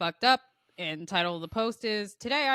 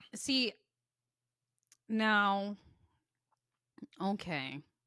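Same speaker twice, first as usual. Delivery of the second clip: beaten, defeated and resigned tone; 4 dB quieter than usual. Reacting to the other speaker's story topic, sounding defeated. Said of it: "You sound so defeated".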